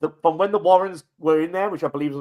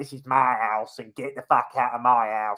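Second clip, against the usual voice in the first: put-on young girl's voice, slower; 3 semitones lower than usual. Recounting movie footage, the speaker mimics a young girl suddenly talking differently: imitating a girl's changed voice. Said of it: "all of a sudden talking like this".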